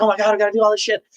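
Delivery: put-on frantic, very high-pitched, panicked freaking out. Retelling a movie scene, acting out Leonardo DiCaprio's character: mock freaking out as DiCaprio. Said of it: "Leonardo DiCaprio's freaking out".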